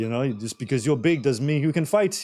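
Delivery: put-on Egyptian-accented speech. Retelling what a restaurant owner said: imitating an egyptian accent. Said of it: "he's Egyptian, he has this accent".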